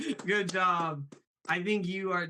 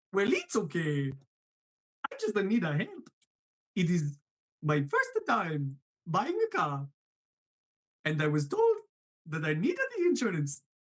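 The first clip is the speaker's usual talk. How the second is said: swooping, sing-song voice with wide pitch swings. Phoning an insurance agent in a role-play skit: Mario voice. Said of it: "as Mario".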